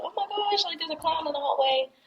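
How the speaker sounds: high-pitched, startled mock yell.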